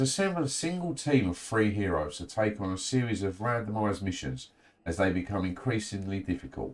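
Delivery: ordinary delivery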